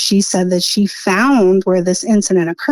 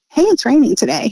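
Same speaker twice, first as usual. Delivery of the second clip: mock breezy, nonchalant, offhand throwaway delivery, pitched up; 6 semitones higher than usual. Retelling how a wood deliverer mentioned a death: imitating a casual offhand remark. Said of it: "he said it like".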